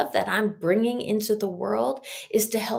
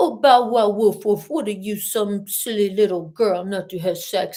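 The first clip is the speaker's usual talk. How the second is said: mocking baby talk, louder; 5 dB louder than usual. Retelling how a man once pressured the speaker: imitating baby talk. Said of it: "You did not just fricking baby talk me".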